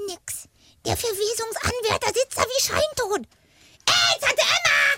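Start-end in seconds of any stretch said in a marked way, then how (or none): 3.9-5.0 high, slow, drawn-out shout. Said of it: "Schrei die alte Frau nicht an".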